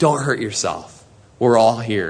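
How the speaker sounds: loving, hopeful voice. Retelling a prisoner calling out to a frightened jailer: imitating a loving voice of hope. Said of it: "this loving voice of hope".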